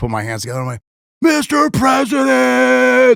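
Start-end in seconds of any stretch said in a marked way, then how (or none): 1.2-3.2 raspy, very high, rough acted-out scream. Retelling calling out to the president for a photo: imitating own scream. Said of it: "Screams like".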